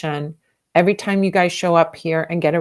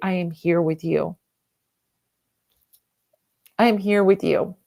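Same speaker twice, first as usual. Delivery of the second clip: moved, emotional, heartfelt, feeling every word. Speaker tells how to comfort someone who is suffering, getting emotional. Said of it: "I'm getting super emotional".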